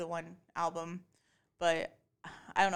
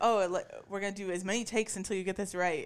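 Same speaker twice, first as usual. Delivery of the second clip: plain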